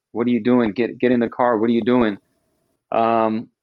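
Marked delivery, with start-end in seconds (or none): none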